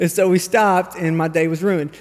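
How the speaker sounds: normal talking voice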